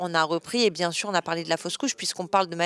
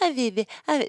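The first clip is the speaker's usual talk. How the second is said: mock baby talk, high and cooing. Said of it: "parlé comme un bébé".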